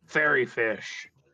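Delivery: resounding voice. Describing what the listener hears, the storyteller delivers the words in a booming voice. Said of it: "in that same booming voice".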